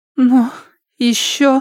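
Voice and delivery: quivering, trembling, very high-pitched voice. Minan, offered a return to normal life by Fang Mu, asks in a trembling voice. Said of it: "спросила она дрожащим голосом".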